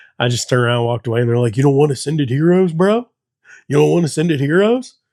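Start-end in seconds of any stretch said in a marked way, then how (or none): 1.6-4.9 mocking, funny and stupid-sounding men's voice. Retelling men in a line taunting: imitating men acting funny and stupid. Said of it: "all acting funny and stupid".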